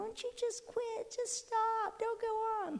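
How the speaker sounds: little whimper voice, high-pitched and soft.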